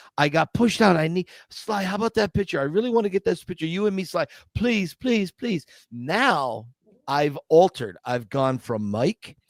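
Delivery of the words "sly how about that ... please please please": put-on groveling, whining pleading voice, high-pitched. Retelling begging a star for a photo: retelling own whiny begging. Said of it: "I start to grovel and beg and whine".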